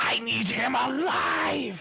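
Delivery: slow, high-pitched, furious hiss. Voicing a character who spins around at an ally: angry hiss. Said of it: "I hiss at her".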